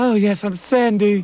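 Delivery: fake high doll voice, very slow, drawn out. Joking about Captain Janks's lack of disguise, imitating Captain Janks's fake doll voice. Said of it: "somebody making the voice for his rubber doll".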